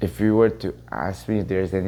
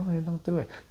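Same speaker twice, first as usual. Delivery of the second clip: said kindly, nice tone; 10 semitones higher, 5 dB quieter than usual. Showing how people don't say it when discouraging you, nice tone. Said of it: "they don't say it in a nice tone. Not like this".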